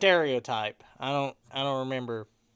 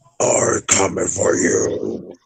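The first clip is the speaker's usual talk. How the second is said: very loud, deep, rough monster roar; 7 semitones lower, 8 dB louder than usual. Performing on request to scare everyone in the chat: deep scary monster voice. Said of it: "do the deep voice".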